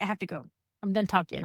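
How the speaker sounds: plain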